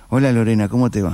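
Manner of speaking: low flat voice.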